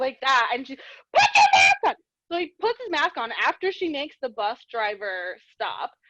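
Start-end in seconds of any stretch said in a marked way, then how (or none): 0.8-1.9 shrill, very high, straight-up yell. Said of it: "Straight up yelling like that".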